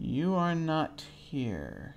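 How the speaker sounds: reverberating, echoing voice. Narrating a game, the speaker voices a statue answering a greeting: echoing statue voice. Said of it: "more of sort of an echoing voice".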